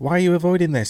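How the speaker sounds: petty, snide, bitchy, small high mocking voice. Criticizing a man who keeps using a mocking voice, imitating his small bitchy voice. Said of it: "small bitchy voice".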